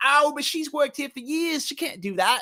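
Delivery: put-on Australian accent. Quoting what other people say at work, in a put-on australian accent. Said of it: "That's my Australian, by the way".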